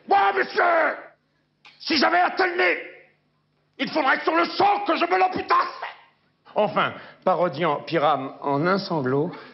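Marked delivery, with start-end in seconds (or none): 0.1-5.8 belligerent, confrontational, aggressive, pitched-up delivery. Speaker showing remarks in varied tones, this one aggressive. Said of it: "en variant le ton, ... Agressif".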